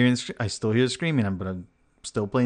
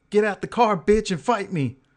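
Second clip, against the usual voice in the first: play-acted screaming at very high pitch; 10 semitones higher than usual. Retelling how a stranger by the truck screamed at him: imitating someone screaming. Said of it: "he's screaming at me saying".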